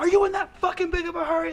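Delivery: play-acted, very high-pitched, furious screaming. Retelling a driver who raced up at a light, imitating a man screaming. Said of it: "Like screaming at me".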